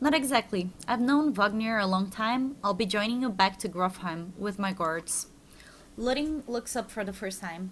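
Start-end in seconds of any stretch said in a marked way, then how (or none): none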